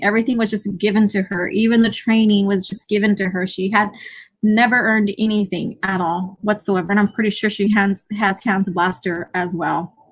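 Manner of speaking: usual speaking voice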